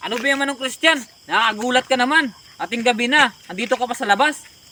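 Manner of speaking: high, loud startled shout. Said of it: "Huwag mo akong sisigawan".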